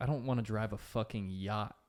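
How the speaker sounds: plain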